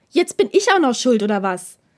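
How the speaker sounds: bottled-up, indignant outburst of held-back rage. A man with suppressed rage protests to someone he expected on his side, almost shouting. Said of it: "schrie Takeda nun fast".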